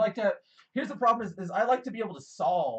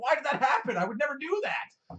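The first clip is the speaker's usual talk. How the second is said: high, loud angry outburst. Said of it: "I throw my controller 'cause I get angry".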